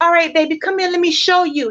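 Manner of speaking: put-on loving, gentle, nurturing tone. Acting out a reply to a partner who doesn't understand: put-on loving, nurturing tone. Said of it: "Show in such a loving and nurturing way".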